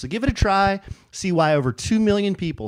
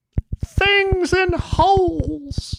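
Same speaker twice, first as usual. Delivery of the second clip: put-on suggestive voice, pitched very high. Reading a listener letter's subject line aloud: changed voice for a lewd word. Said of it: "Why'd you change your voice for that?".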